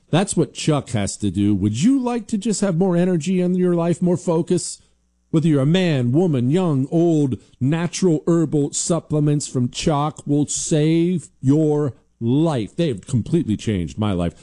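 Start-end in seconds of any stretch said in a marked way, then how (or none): 1.5-12.7 energetic, pumped-up delivery. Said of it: "Do I sound fired up to you?".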